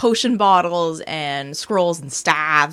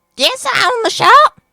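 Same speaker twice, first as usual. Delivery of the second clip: put-on witchy, shrill, loud little old-lady voice, very high; 8 dB louder than usual. Playing a shopkeeper answering a customer's question: little old lady voice. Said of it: "I can't do that voice anymore".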